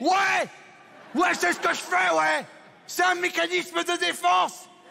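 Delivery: high, loud, proud, defiant yell.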